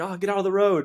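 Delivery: high-pitched mock yell.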